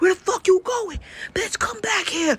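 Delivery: very high, shrill, high-pitched acted scream. Retelling a man chasing after her: imitating a man screaming. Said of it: "He screaming".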